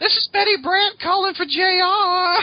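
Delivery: put-on woman's voice, very high. After asking who does a good female voice, the speaker voices the caller: put-on female voice. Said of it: "Who does a good female voice?".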